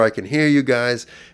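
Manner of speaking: mild, high-pitched yell. Retelling a hospital delusion, screaming at nurses out the door: retelling a scream. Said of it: "I'd scream out the door".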